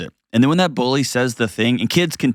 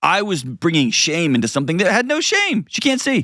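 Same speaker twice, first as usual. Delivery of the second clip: ordinary talk, nothing marked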